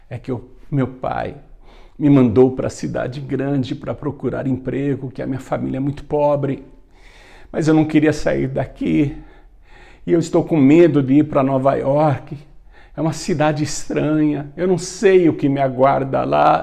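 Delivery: speaking through put-on sobs. Retelling a young boy's words to an old man on the road: acting out sobbing while speaking. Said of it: "E o William contou, soluçando".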